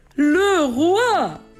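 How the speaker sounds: big, booming announcing voice. Reading a bedtime story, the announcer at court proclaims, in a big voice. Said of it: "annonce avec sa grosse voix".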